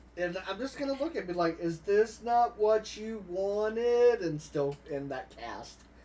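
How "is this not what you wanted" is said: deep resonant booming reverberating voice, louder. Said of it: "Just reverberating through the room".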